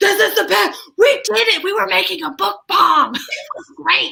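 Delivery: very high, thrilled, excited chatter. Retelling what Chip said about the project: imitating excited Chip. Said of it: "Chip's all excited".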